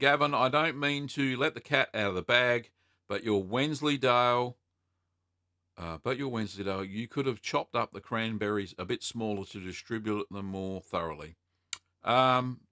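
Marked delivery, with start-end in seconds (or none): none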